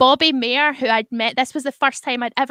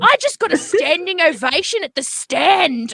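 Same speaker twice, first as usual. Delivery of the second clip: mock scream, higher pitch; 5 semitones higher than usual. Retelling a comedian's response to a silent audience: imitating someone screaming. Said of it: "Starts screaming at them".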